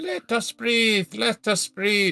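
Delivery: put-on strong, heavier Irish accent, very high. Voicing a god in a tabletop game after being told the accent was wrong, stronger irish accent. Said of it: "That was even more Irish".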